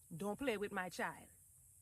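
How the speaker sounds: put-on Trinidadian accent. Act out what your mama said about her child, in a Trini accent. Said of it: "she said it in a in a Trini accent".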